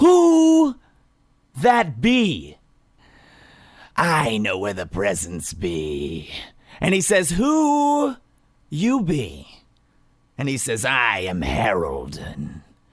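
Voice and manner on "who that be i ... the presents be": spooky, eerie character voice. Telling a spooky story and voicing a figure in it, creepy voice. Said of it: "make this as creepy as possible".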